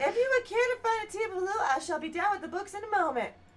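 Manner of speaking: very high-pitched put-on voice drifting into southern accent. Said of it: "It went back southern again".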